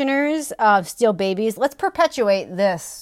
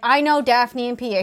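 ordinary talk

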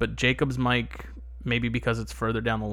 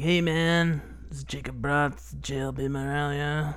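put-on slow, weird smoker's voice; 3 semitones higher than usual. Telling a friend about the little guy who's always there, imitate him in a weird smoker's voice. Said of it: "He's got that weird smoker's voice".

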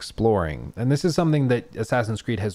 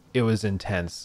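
ordinary talk, nothing marked

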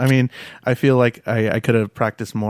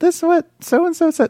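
distracted middle schooler voice. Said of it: "they're like".

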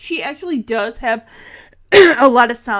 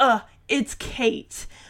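irritable, breathy, half-whispered; 7 dB quieter than usual. Retelling how Edward corrected someone's name: imitating an irritable tone. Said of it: "an irritable tone".

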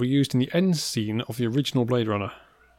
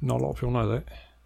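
clumsy fake Cockney film-star voice. Quoting a film star after his name comes up: terrible Michael Caine impression. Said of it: "that's a terrible Michael Caine impression".

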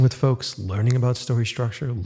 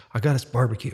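put-on proud, boastful voice; 4 dB quieter than usual. Retelling a movie shoot where the director brought food: imitating a proud director. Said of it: "the director was just so proud".

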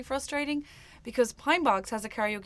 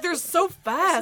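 put-on tipsy, drunken wonder, voice raised and high; 8 semitones higher, 6 dB louder than usual. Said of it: "drunkenly staring at the words and being like".

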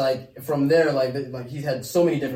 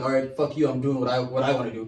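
ordinary talk, nothing marked

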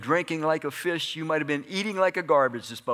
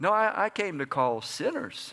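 normal talking voice

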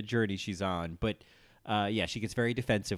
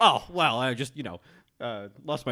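loud delivery, words broken up by scoffs; 4 semitones higher, 7 dB louder than usual. Quoting a favorite line from a fight: scoffing Alyssa Edwards impression. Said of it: "It's that kind of scoffing".

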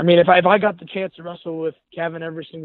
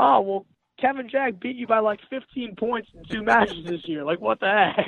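put-on yelling, shouting voice, higher; 5 semitones higher, 4 dB quieter than usual. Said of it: "why are you yelling at me?".

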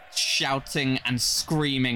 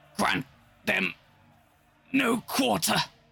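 rough, pitched-up snarl on a dying last breath; 6 semitones higher than usual. Narrating a battle, voicing Captain Sardax with her dying breath: dying snarl. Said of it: "she snarls with her dying breath".

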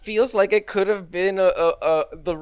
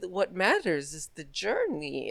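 put-on coy innocent tone, much quieter; 9 dB quieter than usual. Retelling a film scene where she looks back at the camera: imitating coy innocence. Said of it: "very coyly, very innocently smiling".

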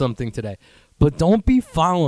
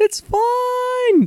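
very high, insincere fake voice, drawn out. Retelling someone's answer when asked if they are sure, imitating a high-pitched voice. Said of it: "you never talk like this".

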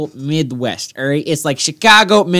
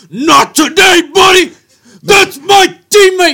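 put-on shout, higher and louder; 13 semitones higher, 6 dB louder than usual. Retelling a hockey play, imitating a player shouting. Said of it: "He's like".

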